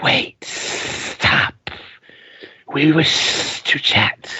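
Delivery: sibilant, hissing giant-spider voice. Storyteller voicing unseen spiders to the listeners, in a hissing spider voice. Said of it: "As you hear this hissing voice".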